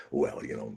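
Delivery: rambling run-on delivery without pausing for breath. Describing how Scott Ritter always talks: imitating Scott Ritter. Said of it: "he's always going".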